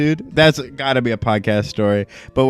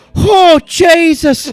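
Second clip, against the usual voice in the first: put-on very high, loud, pained yelp in Irish accent; 7 dB louder than usual. Retelling how a tattoo client cried out: imitating an Irish client's pained cry. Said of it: "he's got a bit of an accent".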